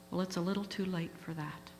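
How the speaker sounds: ordinary delivery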